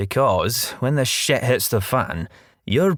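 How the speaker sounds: ordinary delivery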